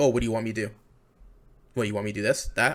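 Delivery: bland, dismissive, patronizing, condescending tone. Imitating a general manager answering reporters: imitating condescending replies. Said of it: "really bland, condescending responses, like".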